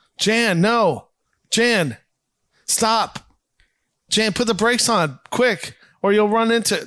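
very slow delivery, every word drawn out. Acting out a scene recap where Greg warns Jan about the portrait: imitating Greg. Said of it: "I know you do a good impression of this".

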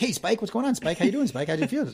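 high-pitched cartoon dog voice. Imitating the dog in the Bugs Bunny cartoon greeting Spike: Bugs Bunny cartoon dog voice. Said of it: "that dog in that Bugs Bunny cartoon".

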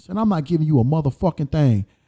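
plain

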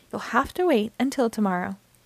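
plain reading voice

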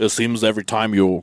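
exaggerated, really deep put-on voice. Reading a fellow speaker's article aloud in his voice: really deep put-on voice. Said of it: "Got this really deep voice".

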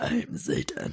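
low, deep, growling, guttural voice. Recreating the guttural voice it spoke with, in a deep guttural voice. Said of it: "In a deep guttural voice".

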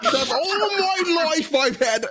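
very high voice with accent slipping into Scottish. Put on the spot to do an accent, trying again, accent attempt coming out Scottish. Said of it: "No, it's coming out Scottish".

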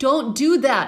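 screaming loudly into the mic. Reacting to people riding on top of elevators, screaming into the mic. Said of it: "I'm screaming into the mic".

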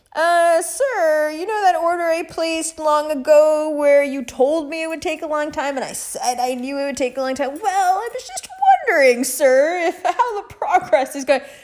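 stiffly over-courteous, overly polite, formal voice. Imitating an overly polite customer asking about an order. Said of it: "I can't go in there and be like".

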